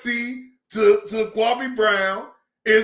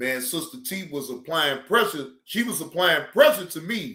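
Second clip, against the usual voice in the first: ordinary talk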